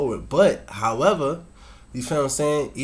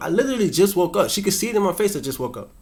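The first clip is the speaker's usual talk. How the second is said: ordinary talk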